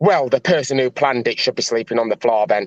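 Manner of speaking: acted sour, negative-sounding tone. Imitating another speaker's comment to show how it sounded: imitating someone's negative tone. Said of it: "I'm just showing you what your voice tone were like".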